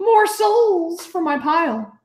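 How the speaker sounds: crackly, crackling, very high creature voice. Game master voices what a player hears in their head while casting, crackling voice. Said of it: "And it crackles".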